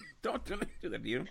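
soft, playful voice, choked up with emotion. Speaker reacting to a list that is pushing their career down: jokingly choked up. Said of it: "I'm getting all choked up here".

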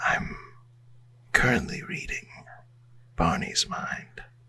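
soft, unvoiced whisper. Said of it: "I'm whispering to Alandi right now".

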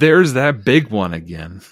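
normal talking voice

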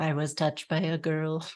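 tinny-sounding voice. A voice speaks just before a character goes in, tinny voice. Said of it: "a tinny voice says".

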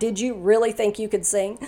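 ordinary talk, nothing marked

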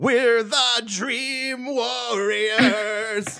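high-pitched, slow, belted-out singing. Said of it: "I like screaming the lyric".

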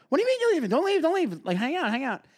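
put-on play-acted very high drunk voice, pleading and slurring. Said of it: "this drunk idiot just roaming around going".

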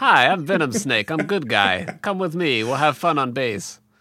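put-on Russian-accented English. Speaker jokingly plays the game's hero introducing himself: Venom Snake in Russian accent. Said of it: "I don't know why I was Russian just now".

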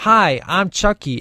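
stiff delivery sounding like a bad dub. Mocking how the doll talks in the movie's first half: Chucky impression. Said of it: "And he'd be like he was in a Japanese movie".

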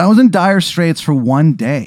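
desperate, pleading tone.

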